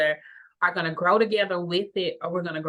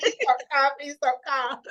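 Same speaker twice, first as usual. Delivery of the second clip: acted pleading tone, much higher; 8 semitones higher than usual. Recounting how she had to tell her not to call, retelling a plea. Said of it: "I had to tell her not to call".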